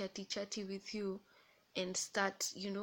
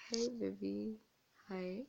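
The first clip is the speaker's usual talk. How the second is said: put-on humble voice. Retelling how he answers a call from his mother: imitating his humble tone. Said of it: "he's like".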